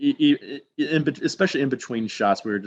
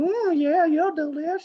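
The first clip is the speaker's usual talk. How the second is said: goofy, silly put-on voice, much higher. Retelling what the speaker said while someone hovered close, in a silly voice. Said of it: "start doing some silly voice".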